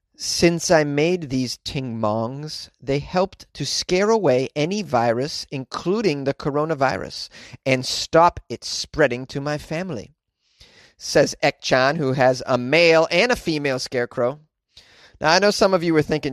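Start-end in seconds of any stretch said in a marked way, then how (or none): none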